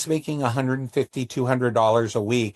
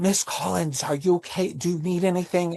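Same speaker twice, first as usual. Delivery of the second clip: imitated whisper, higher pitch; 6 semitones higher than usual. Retelling kneeling in the aisle during a live broadcast: retelling a whisper. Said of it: "I knelt down and I whispered".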